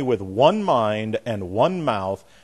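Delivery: "one" stressed hard on both occurrences. Reading a Bible passage aloud, stress on both ones. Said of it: "I almost can't read it without emphasizing a particular word. Did you hear it? Huh? One".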